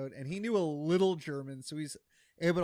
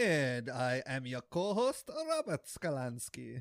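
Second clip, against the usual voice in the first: put-on German accent. Co-host introduces himself at the show's start in a put-on German accent. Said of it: "How was my German accent?".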